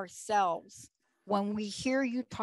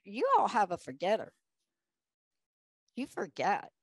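put-on swooping southern drawl. Recalling what she used to say to the three girls, attempted southern drawl. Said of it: "I can't do a great southern drawl".

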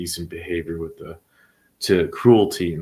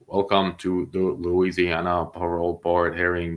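slow, flat, boring robotic announcer monotone. Mocking an old intro announcement: slow, boring monotone. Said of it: "that slow, boring, monotone voice intro".

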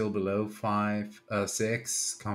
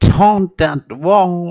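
yelling into the microphone, higher and louder; 9 semitones higher, 19 dB louder than usual. Saying goodnight into the microphone: shouting into the microphone. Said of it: "not shout in it".

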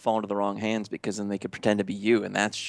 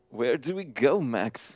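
trembling put-on voice; 3 semitones higher than usual. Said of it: "so it's just a shaky voice".

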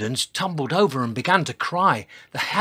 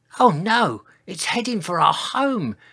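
words gasped out; 4 semitones higher than usual. Sizo, watching the burning river flow through the forest, speaks, gasping. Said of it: "gasped Sizo".

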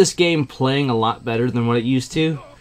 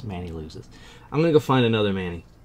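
ordinary talk

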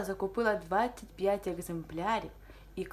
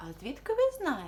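genuinely surprised, astonished, caught off guard; 4 semitones higher than usual. A woman answers the bookseller's question, surprised. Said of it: "здивовано відповіла Анна".

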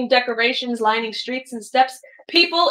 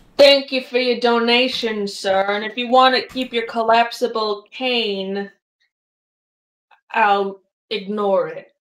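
low, hushed voice, stretching out "cane". A character hefts a donated coin and speaks to the player, in a lowered voice. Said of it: "lowers his voice again".

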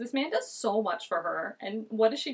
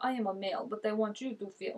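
man speaking in a fake Russian accent; 4 dB quieter than usual. Mocking how a man twists things, speaker quotes him in a put-on Russian accent. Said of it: "Why am I making him Russian?".

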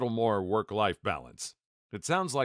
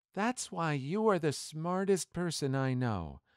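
put-on earnest, utterly heartfelt sincerity, pitched high; 5 semitones higher, 3 dB quieter than usual. Reading a story of a sleep-talking wife answering the narrator, in her most sincere voice. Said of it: "said in her most sincere voice".

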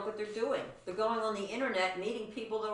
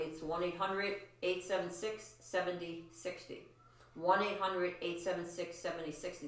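slow, soft, deliberate, carefully paced and measured delivery; 3 semitones lower, 5 dB quieter than usual. Reading out a phone number for the audience, saying it slowly. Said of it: "I will say it slowly".

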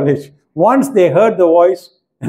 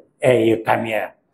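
deep, masculine-sounding man's voice; 6 semitones lower, 5 dB quieter than usual. Retelling the first time a woman who never talked spoke in the hall, imitating a male-sounding voice. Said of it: "she got a male voice".

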